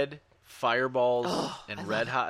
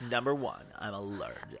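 soft put-on lady voice; 4 semitones lower, 9 dB quieter than usual.

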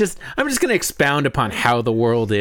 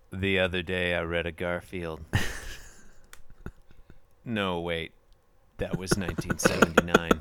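put-on deadpan comedian voice; 7 semitones lower, 10 dB quieter than usual. Answering a request to describe a comic strip as Stephen Wright. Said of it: "what if Stephen Wright were to describe this strip?".

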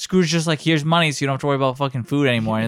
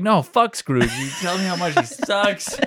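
acted, loud, forceful yelling tirade; 4 semitones higher than usual. Retelling a scene where a wife complains about Scrooge: imitating someone yelling. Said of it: "his employee's wife is yelling at the employee".

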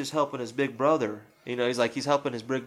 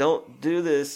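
mock pleading, much slower; 2 semitones higher than usual. Recapping a story where one brother pleads with the other: acting out pleading. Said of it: "he's basically pleading at this point".

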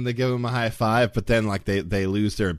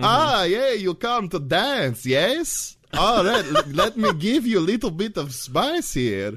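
very high, drawn-out put-on Eastern European accent; 10 semitones higher than usual. A game master voicing a club drake, Eastern European accent. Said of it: "I don't know why this club Drake is Eastern European".

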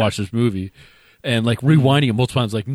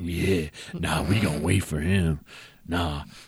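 predatory, leering, low, slow drawl; 6 semitones lower, 7 dB quieter than usual. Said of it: "looking at him like a piece of meat".

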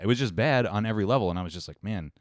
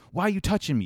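mock, very high-pitched freaked-out outburst; 9 semitones higher than usual. Retelling a subway argument, imitating a man freaking out. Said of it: "starts freaking out".

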